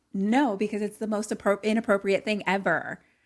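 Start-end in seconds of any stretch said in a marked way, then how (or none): none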